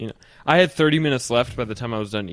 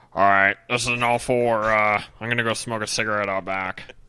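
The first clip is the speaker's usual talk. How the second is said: offhand, casual way of talking. Doing an impression of a coworker announcing a smoke break: imitating Jake. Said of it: "This is exactly how he sounded".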